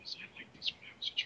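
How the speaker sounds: hushed, breathy, barely voiced whisper. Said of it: "on a whisper".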